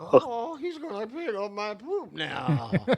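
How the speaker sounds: slow, lilting, drawn-out, swooping sing-song dog voice. Answering how Lakota sounds, performing Lakota's voice. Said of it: "How does Lakota sound?".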